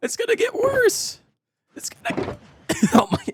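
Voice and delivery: voice barely hanging on, cracking, breaking and cutting out. Speaker whose voice is barely hanging on, voice cutting out. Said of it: "my voice actually just like properly just cut out".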